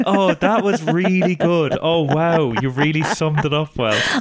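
mock gushing, effusive tone.

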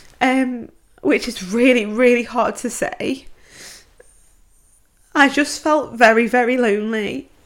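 close to crying. Sharing the loneliest period of one's life, close to crying. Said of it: "I didn't think I was gonna cry".

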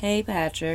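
mock-bored calm tone. Retelling how she greeted patrick, imitating a calm, bored greeting. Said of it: "She's like all like calm and bored".

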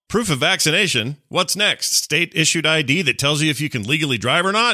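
put-on, exaggerated dripping sarcasm, high pitched. Reading out their own tweet from last night, in a mock-sarcastic tone. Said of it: "being very sarcastic".

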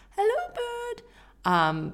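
very high, sugary, sweet, unsettling creature voice. Showing how Fred talks to creatures, greeting a bird: imitating Fred's creepy bird voice. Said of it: "say hello to a bird in a creepy voice".

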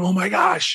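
high-pitched, excited, freaking-out amazement. Retelling a girl's reaction to money poured into her hands: imitating a girl freaking out. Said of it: "she's freaking out".

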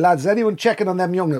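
ordinary talk, nothing marked

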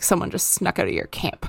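low, snide, nasty-sounding voice.

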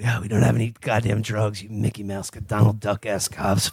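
acted-out muttering under breath. Recapping a movie, the speaker acts out a character muttering under his breath. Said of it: "he's just muttering under their breath".

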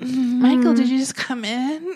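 sexy sleepy voice. Retelling a scene where Kimberly wakes from a nap: Kimberly's sexy nap voice. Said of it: "in her sexy nap voice".

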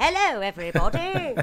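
put-on speaking with an English accent. Acting out a guest arriving at a party: Charlie Chaplin English accent. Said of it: "but he's English, so he's like".

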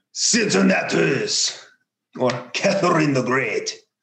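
bad put-on French accent. Asked to really lean into it, the speaker says both names in a bad French accent. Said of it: "Really lean into it here".

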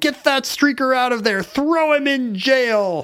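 put-on high yell, "jail" drawn out. Telling a story about a 1974 ballgame, imitating Ray Kroc yelling. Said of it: "Kroc is yelling".

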